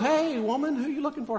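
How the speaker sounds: high, playful teasing tone. Acting out Jesus teasing the woman at the tomb: imitating playful Jesus. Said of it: "he's playing".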